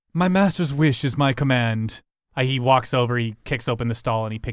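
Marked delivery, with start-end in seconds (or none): 0.1-2.0 big, commanding, charismatic, strapping voice. Voicing a servant answering a player's command: charismatic strapping voice. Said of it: "you sounded more strapping".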